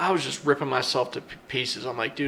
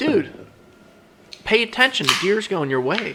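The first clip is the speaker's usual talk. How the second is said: acted-out, pitched-up yell; 6 semitones higher, 4 dB louder than usual. Retelling a hunt, yelling at a partner to pay attention: retelling own yell. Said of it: "I'm yelling at him".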